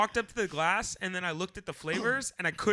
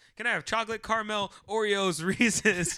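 rapid-fire, rattled-off delivery; 2 semitones higher than usual. Retelling ordering ice cream toppings: imitating own rattled-off order. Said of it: "I said it like this".

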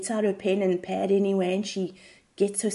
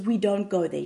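ordinary talk, nothing marked

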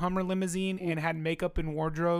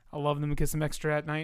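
normal talking voice

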